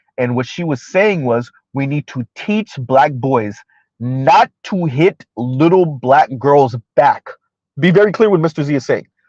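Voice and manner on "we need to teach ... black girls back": slow, careful, deliberate delivery. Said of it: "Mister Z is gonna talk slow so I can be very deliberate".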